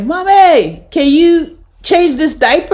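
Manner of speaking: mock high yell, called out loudly as if across rooms. Retelling calling to mother from another room: imitating own yell. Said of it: "I'm yelling from one room to my mother".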